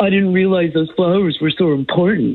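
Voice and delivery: patronizing, superior, talking-down tone. Retelling what a husband said during a fight: imitating husband's condescending tone. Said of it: "was so condescending".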